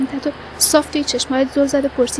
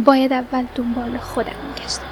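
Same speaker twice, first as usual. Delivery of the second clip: ordinary delivery, nothing marked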